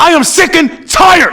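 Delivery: screaming at full volume, very slow and drawn out. Addressing the city council after a warning: yelling and screaming. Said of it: "you're not gonna yell and scream".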